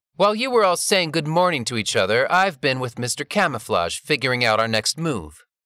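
plain reading voice

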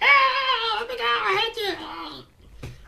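very high, very slow, creaky, raspy gremlin voice. Voicing Libby when she doesn't want to be held, Libby in a gremlin voice.

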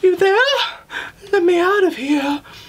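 high-pitched female voice. A game narrator voices a woman chained to the wall calling out, chained woman's voice. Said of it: "You notice Mila that there's a woman chained to the wall".

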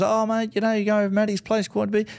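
high-pitched, rapid friendly chatter.

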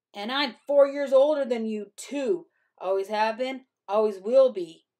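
loud, taunting, superior, scornful sneer. Narrator reads a character's taunt to the younger narrator, sneering. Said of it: "he sneered".

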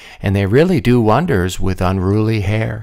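plain

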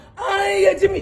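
high, loud cheering crowd.

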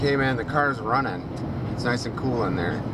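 normal talking voice

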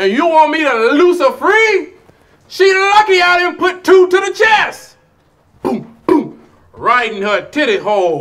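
very high, shrill, very loud hollering rant. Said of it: "why is he yelling?".

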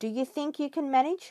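light, gentle teasing. Grandfather speaks to the children before a week of meetings, playfully teasing. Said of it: "with a twinkle in his eye".

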